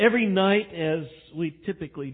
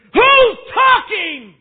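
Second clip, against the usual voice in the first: sudden shrill, very loud, booming high yell; 14 dB louder than usual. Retelling a frustrated man quieting boys jumping on beds, retelling a shout. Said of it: "That just woke some of you up".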